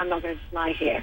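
normal talking voice

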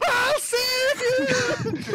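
very high, very loud screaming shout. Voicing a sorcerer who teleports up to grab a drifting ally: screaming. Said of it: "Suddenly a screaming sorcerer going".

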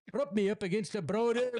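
very high-pitched put-on Scottish accent. Repeating a joke request in a put-on Scottish accent. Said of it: "Now I'm doing a Scot-".

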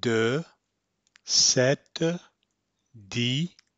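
very slow, careful French, each word drawn out. Showing listeners how to say a French phrase, very slow. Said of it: "say very slowly".

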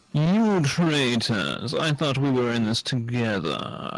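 put-on posh, wealthy gentleman's tone. Playing a character whose companions just believed Polly's lie, in a rich guy voice. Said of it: "Why did he change his voice to a rich guy?".

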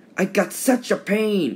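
hissed, high and drawn-out. Thomas, an engine with too much steam in his boiler, hissed. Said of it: "Thomas hissed".

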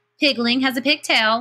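jeering taunt. Peony mocks Pear Blossom, jeering. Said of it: "jeered Peony".

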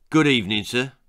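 harsh, gruff voice. Narrating a story as police dogs burst in and a voice speaks, gruff voice. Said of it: "said a gruff voice".

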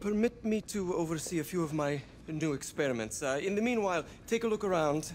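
put-on high-pitched Serbian-accented voice. A game character from Serbia speaks in a put-on Serbian accent. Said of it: "I don't know what accent he's doing".

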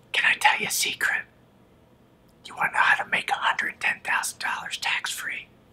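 speaking in a whisper. Teasing a secret to viewers: whispering. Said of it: "Why am I whispering?".

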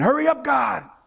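put-on very high, impatient scream. Preaching about impatience with unanswered prayer: imitating someone screaming. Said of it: "some of us may be screaming".

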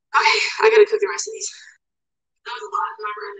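breathless, puffing between words. A creator cooking on camera talks to viewers, out of breath. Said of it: "I'm out of breath".

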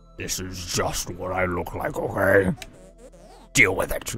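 strained, effortful put-on voice. Reading a game character's line aloud: voice-straining character voice. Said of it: "I'm gonna strain my voice by doing this".

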